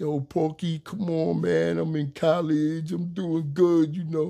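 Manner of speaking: crying, high, drawn-out tearful pleading voice. Retelling begging a police officer for a break: retelling a tearful plea. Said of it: "I'm crying like a little".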